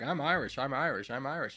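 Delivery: schoolkid voice parroting the same line. Retelling what everyone said growing up: imitating classmates. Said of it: "everyone growing up like".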